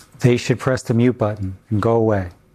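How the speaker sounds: ordinary talk, nothing marked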